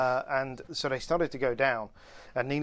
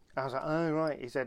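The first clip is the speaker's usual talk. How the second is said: normal talking voice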